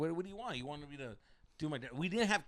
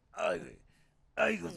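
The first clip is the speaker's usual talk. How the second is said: strange, weird groans through the words; 3 semitones lower than usual. Telling a friend about a guy groaning nearby: imitating someone groaning. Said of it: "he's doing weird ass groans".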